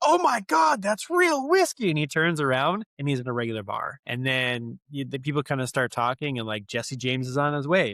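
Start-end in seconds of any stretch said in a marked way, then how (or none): 0.0-1.9 mock, very high, shrill, shrieking yell. Retelling a scene where the character drinks and yells: imitating someone yelling. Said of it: "him yelling".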